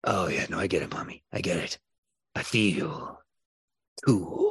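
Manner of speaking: put-on little owl creature voice, low and soft. Voicing a winged creature talking to Mommy, winged creature character voice. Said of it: "wraps himself up with his two wings and he goes".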